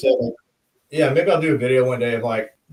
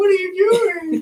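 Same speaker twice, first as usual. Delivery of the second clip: very high, put-on girlish voice; 3 dB louder than usual. Showing the character voices done when taking turns reading pages, girl voice. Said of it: "like the girl voice and stuff".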